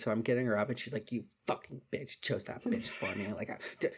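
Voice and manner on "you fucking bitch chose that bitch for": put-on angry mumbling, quieter. Retelling a drunk friend's words while getting her up: imitating angry mumbling. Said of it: "mumbling, like, pissed off shit to herself".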